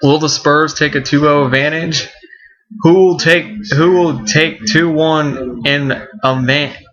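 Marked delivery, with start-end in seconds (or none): 2.8-6.7 slow, stumbling stutter, repeating words. Previewing the playoff games for the audience, stuttering a little. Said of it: "I'm kind of stuttering a little bit".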